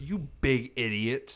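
sincere, earnest delivery, meant for real. Retelling a phone call where she called the speaker an idiot: imitating a sincere insult. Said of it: "she sounded so sincere".

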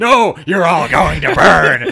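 very loud, slow, drawn-out, crazed ranting. Retelling a radio interview, imitating a crazy old man ranting. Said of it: "crazy old guy who's on a radio show".

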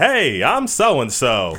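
bad put-on Texan accent with swooping, swinging pitch. Retelling a scene where Arnold gets off a treadmill: bad Texan accent. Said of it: "real bad, like, Texan accent".

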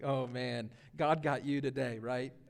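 put-on very low, quiet, hushed teasing. Retelling a son's reaction as his father's sermons are praised, imitating a smirk. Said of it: "with a big smirk on his face like".

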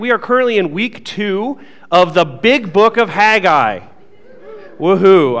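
sarcastic, tongue-in-cheek burst of enthusiasm. A church teaching-team member introducing the current study to the congregation, sarcastic. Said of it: "That was sarcasm".

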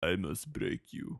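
quiet, breathy, barely audible character-voice whisper. Reading a text message aloud in the voice: Drago voice. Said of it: "I read it in the voice as I was reading it".

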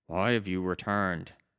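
whispering voice. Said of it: "So you hear whispering".

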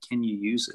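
put-on whisper. Retelling how the father leaned in and asked: retelling a whisper. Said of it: "he just whispered in my ear".

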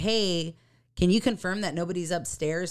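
ordinary talk, nothing marked

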